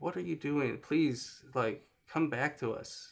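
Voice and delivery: ordinary talk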